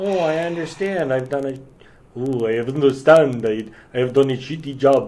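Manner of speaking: poor, bad put-on French accent. Imagining what a man would say after the mayor lets him go, in a bad french accent. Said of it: "I don't do a good French accent".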